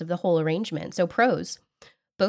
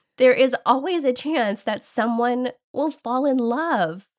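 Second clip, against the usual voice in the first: tongue-in-cheek, mocking, pitched-up, sarcastic delivery; 5 semitones higher, 3 dB louder than usual. Reading out the last con of sugar dating: sarcastic. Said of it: "I told you I wasn't gonna be sarcastic".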